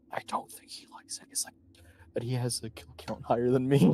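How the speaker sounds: whispered aside in character voice. Turning to Kurok to share a remark about a companion: whispering in character. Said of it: "turn to Kurok and whisper".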